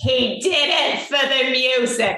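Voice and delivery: mock booming shout. Retelling an audience member calling out in a theater, retelling a booming call-out. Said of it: "this voice booming out of the theater".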